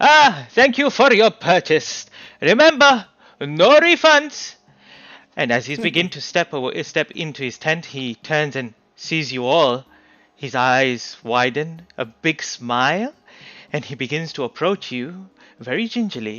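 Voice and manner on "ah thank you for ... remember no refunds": very loud, high, booming, rowdy, boisterous market hawker voice. A man steps out of his tent with a regal couple, in a loud boisterous voice. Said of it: "a very loud, boisterous voice".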